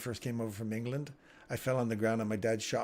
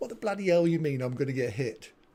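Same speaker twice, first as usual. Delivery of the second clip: put-on loud young boy voice with an English accent; 3 semitones higher, 6 dB louder than usual. Retelling his childhood words to a football coach: imitating himself as a little English kid. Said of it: "Little English kid".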